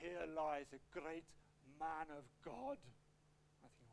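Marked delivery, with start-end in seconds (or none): 0.0-2.8 big, deep, low, slow booming Welsh voice. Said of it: "with my best Welsh voice ... big, deep voice".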